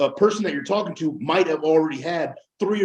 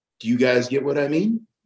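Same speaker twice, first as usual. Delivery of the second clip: upward lilt, rising at the end on mean; 2 semitones lower than usual. Showing how an upward inflection asks a question without asking: rise on mean. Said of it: "That's an upward inflection".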